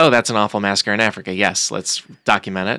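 plain

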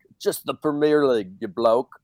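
light touch of an Irish accent. Joking about how other UK members would react, speak with a little Irish accent. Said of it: "Little Irish".

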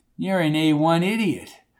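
plain

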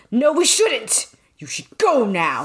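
angry tone. Reading a passage aloud, a man telling her to leave: angry. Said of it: "he said angrily".

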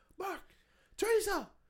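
mock screaming. Speaker retells screaming at friends while drunk, retelling a scream. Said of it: "I was screaming at you guys, I was like".

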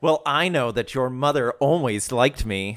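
imitated menacing melodramatic villain voice. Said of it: "gives everybody a dirty look and is like".

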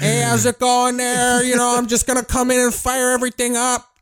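put-on loud, high, shouting Chicago accent. Imitating loud Chicago workers who yell: loud Chicagoan voice. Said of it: "they always talk like there's a generator going on".

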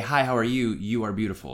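ordinary delivery

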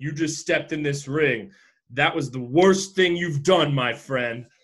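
ordinary delivery

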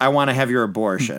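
ordinary talk

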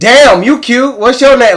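shrill, booming, high, aggressive in-your-face catcall. Retelling how women on the street catcall: imitating loud aggressive catcalling. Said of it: "be mad loud".

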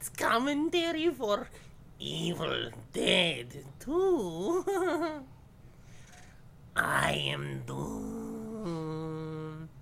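put-on wolf voice. Introducing a movie commentary podcast episode: wolf voice. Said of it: "That is my wolf voice".

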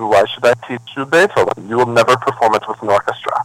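put-on Russian-accented English. Retelling what her teacher said when she asked to study Beethoven, in a Russian accent. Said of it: "she said with her Russian accent".

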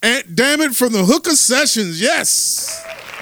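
hype-man announcer voice, high and loud.

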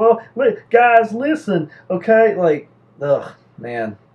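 dumb-guy voice. Co-host shows off his voice for sounding real dumb: real dumb voice. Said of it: "That's just like my voice for just real dumb".

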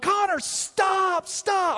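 put-on, very high, screamed delivery. Recounting warning someone about to collide with a car, retelling screaming 'connor, stop'. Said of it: "screaming, yelling".

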